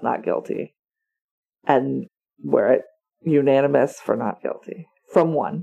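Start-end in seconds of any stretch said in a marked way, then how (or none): 0.0-0.7 whispered, almost under-the-breath mutter. Retelling how a juror gives his vote: imitating a muttered line. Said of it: "almost under his breath".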